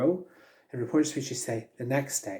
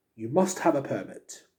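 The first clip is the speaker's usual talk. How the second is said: not-great put-on British accent. Explaining reported speech, giving a direct-speech example in a British accent. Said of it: "Please excuse my British accent".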